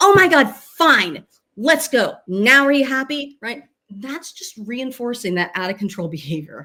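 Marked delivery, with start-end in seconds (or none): 0.0-3.4 put-on loud, exasperated, fed-up voice, drawn out. Describing a mom who finally gives in to her begging child, imitating a fed-up mom. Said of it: "she's had it and she's like".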